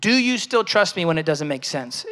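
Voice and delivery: ordinary talk, nothing marked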